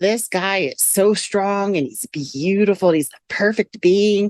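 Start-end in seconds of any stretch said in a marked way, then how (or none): none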